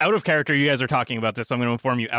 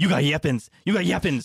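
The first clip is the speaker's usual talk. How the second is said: uneasy, jittery, nervous monster or creature cry; 3 semitones higher than usual. Two beings recoil and back away from the armed group, nervous creature voice. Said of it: "they're getting nervous now".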